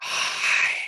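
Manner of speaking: extended, loud stage-whispered "high". Showing a class how to make the exercise sound: extended loud whisper. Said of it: "Keep it extending".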